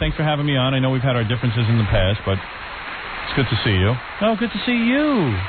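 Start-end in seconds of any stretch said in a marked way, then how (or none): 4.2-5.3 put-on very high, cooing baby talk. Acting out a talk show host greeting him, in Rosie's baby talk. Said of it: "She give me that baby talk".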